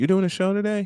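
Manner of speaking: very high, sugary sweet voice. Retelling being asked about doing a show today: imitating a sweet voice. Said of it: "this sweet voice in my ear go".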